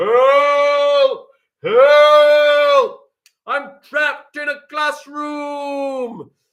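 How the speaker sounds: high, booming, very loud, very slow, drawn-out bellow. Showing a class how a trapped person might call for help, bellowing. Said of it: "They might bellow".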